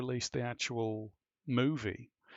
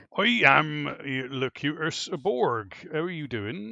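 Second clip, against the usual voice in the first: loud, put-on West Country accent, declaiming; 3 semitones higher, 6 dB louder than usual. Answering a question on how Locutus would sound: West Country Patrick Stewart as Locutus. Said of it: "West Country Patrick Stewart doing the Cut-, Locutus of Borg".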